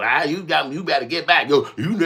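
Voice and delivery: loud, high, shouted yelling. Acting out what to yell at the person who stepped in: acting out a scream. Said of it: "I'm just gonna scream out and yell".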